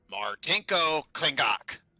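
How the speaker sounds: birdlike raven voice mimicking another voice. Voicing a raven that mimics an unfamiliar voice: raven mimicking a voice. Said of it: "in that kind of mimicry tone of, uh, a raven".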